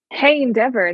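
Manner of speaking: very serious, grave, dead-serious tone. Retelling how someone started acting weird, quoting him greeting someone: imitating a very serious tone. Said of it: "very serious".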